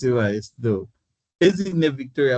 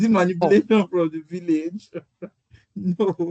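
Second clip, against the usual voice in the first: high-pitched, speaking through laughter; 5 semitones higher than usual. On an online call, joking about a term with the group, laughing while talking. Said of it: "Sorry, I'm laughing".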